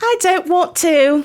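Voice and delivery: put-on very high, slow, snotty, bratty British girl voice. Retelling a movie scene where the bratty AI refuses to open a door: imitating a bratty little British girl. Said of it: "a little British girl, and she's a bee".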